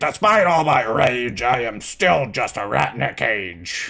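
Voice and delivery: gruff and very slow delivery. Asked how a game's line was delivered, the speaker quotes it a little more gruff. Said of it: "It was a little more gruff".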